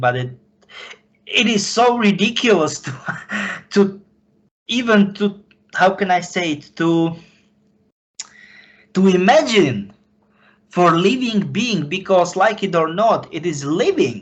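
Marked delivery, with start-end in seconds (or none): 0.0-11.9 talking with laughter mixed in. Speaker apologizes for laughing partway through an explanation, laughing while talking. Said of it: "sorry, I'm laughing".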